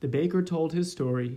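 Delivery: ordinary delivery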